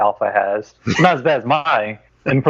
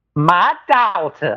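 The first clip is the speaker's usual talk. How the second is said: put-on old-fashioned, genteel Southern accent; 4 semitones higher than usual. Asked to let the listeners in on his accent, [name] speaks in a genteel old Southern accent. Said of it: "sounds like an eighteen hundreds genteel southern plantation owner".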